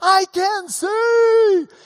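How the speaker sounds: very high, loud joyful shout, see stretched. Retelling a blind man who first sees Jesus: retelling a joyful yell. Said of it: "he was yelling, rejoicing".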